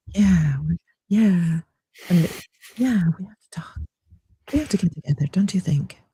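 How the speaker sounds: soft, whispery mock radio host voice.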